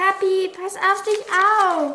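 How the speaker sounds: high, horrified cry, calling out. A daughter calls to her father fighting the dragon, calling out in horror. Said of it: "rief Luna entsetzt".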